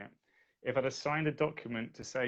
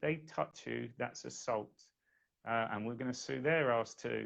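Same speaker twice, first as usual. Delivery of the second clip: plain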